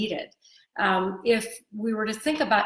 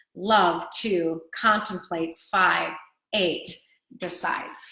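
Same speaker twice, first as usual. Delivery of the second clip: love two contemplates, five, eight decides: slow, each stressed. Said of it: "the name of our chapter is".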